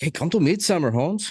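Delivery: put-on Mexican accent, very high pitch, drawn out. Joking about a movie friend's invitation to Midsummer: put-on Mexican accent. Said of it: "I don't know why he's Mexican".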